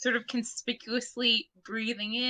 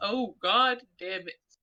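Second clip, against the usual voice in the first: slow voice rolling out, godlike; 3 semitones lower than usual. Imitating another player's line: Monty Python god voice. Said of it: "the fucking god voice from Monty Python is".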